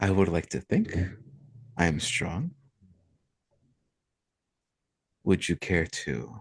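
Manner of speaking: whispering with a chuckle. Voicing the Merchant King answering a player: whispering to himself with a chuckle. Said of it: "chuckles and whispers to himself".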